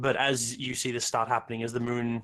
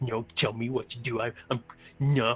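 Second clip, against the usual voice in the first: put-on irritated, huffy man voice. Voicing a man who huffs and starts leaving: voicing a huffy man. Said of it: "he huffs and just starts leaving".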